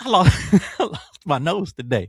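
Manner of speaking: high-pitched, loud speech. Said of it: "That's why I'm talking like that".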